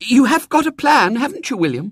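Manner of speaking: anxious, worried, very high-pitched voice. A woman presses a man who says there is plenty of time, anxious. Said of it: "she said anxiously".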